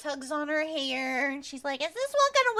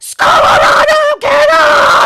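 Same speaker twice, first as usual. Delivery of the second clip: ear-splitting shriek, shrill, very high and very loud; 12 semitones higher, 19 dB louder than usual. Telling a story, the speaker voices a character's line: screaming. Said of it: "She screams".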